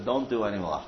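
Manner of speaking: ordinary talk, nothing marked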